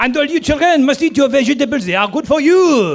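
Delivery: outrageous, heavy French accent, very high and loud. The speaker demonstrates a smaller character he voices: Mister Potato's outrageous French accent. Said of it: "this outrageous French accent, he talks like this".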